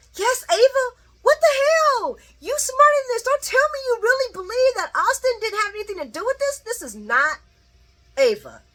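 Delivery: play-acted very high, loud screaming rant. Retelling a reaction to a soap scene: imitating someone screaming. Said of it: "was screaming like".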